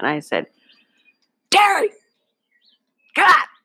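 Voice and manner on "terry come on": shrill, loud, very high mom voice. Retelling telling others to cover their ears, the speaker calls to Terry in mom voice. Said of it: "I'm going to use my mom voice".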